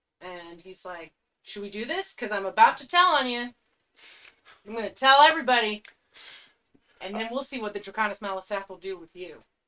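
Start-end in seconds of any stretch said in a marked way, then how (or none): 1.4-9.4 very loud, intimidating, menacing orc voice. Voicing a frontline captain of the draconis malisath confronting the party, intimidating. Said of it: "he's very intimidating".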